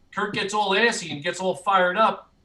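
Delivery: ordinary talk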